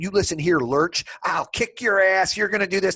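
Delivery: mock screaming. Speaker retells a short chief petty officer screaming at a tall guy; imitating someone screaming. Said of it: "in his face screaming".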